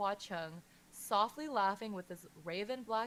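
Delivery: ordinary delivery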